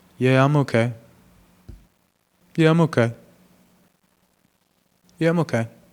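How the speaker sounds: unsure, unconfident voice, shrinking and shutting down. Demonstrating a giveaway answer when asked if okay: voice with no confidence. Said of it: "My voice displays no confidence".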